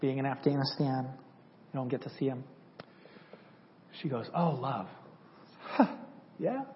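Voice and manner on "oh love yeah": put-on British accent, woman's voice. Recalling a woman speaking to him in Afghanistan; British accent. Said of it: "an amazing British accent voice".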